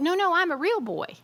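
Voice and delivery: mock tearful, sobbing, high crying voice. Retelling a film clip scene: imitating crying Pinocchio. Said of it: "he's, like, crying".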